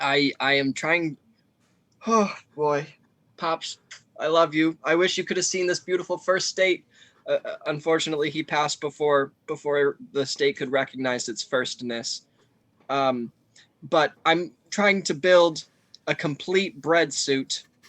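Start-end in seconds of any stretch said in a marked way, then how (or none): 0.0-6.8 emotional, misty voice, a little choked up. Dedicating a project to a late baker father, getting a little emotional. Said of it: "and so I get a little emotional".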